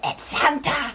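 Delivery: hushed, whispered aside. Speaking as a character, whispering an aside to the librarian. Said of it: "I whisper to the librarian".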